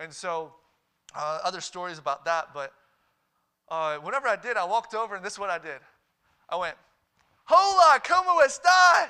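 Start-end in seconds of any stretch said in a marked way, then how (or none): 7.4-9.1 put-on very loud, very high Spanish with a heavy American accent.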